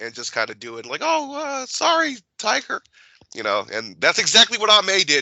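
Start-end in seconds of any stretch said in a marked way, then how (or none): 1.0-2.8 terrible, very high, drawn-out voice. Imitating a mother who ignores requests: terrible Aunt May impression. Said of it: "that's a terrible impression of Aunt May or your mother".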